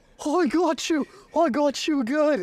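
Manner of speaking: put-on Scottish accent. Retelling a man found hiding under the bed, in a Scottish accent. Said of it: "Scottish accent".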